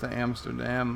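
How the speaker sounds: plain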